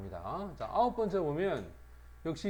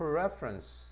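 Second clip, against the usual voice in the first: preference with weight on first syllable pref-. Teacher contrasting the verb prefer with its noun: stress on first syllable of preference. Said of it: "명사가 되면 강세가 앞으로 갑니다".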